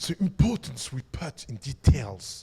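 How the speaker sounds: put-on low-pitched voice with an English accent. Speaker mocks an iPhone pitch, quoting its designer in a Jony Ive impression, English accent. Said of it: "avec son accent anglais, très important l'accent anglais".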